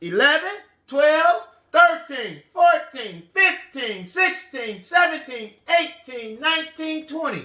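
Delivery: plain, steady counting in a normal voice. Leading a count to one hundred by ones: really loud. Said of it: "say it really loud".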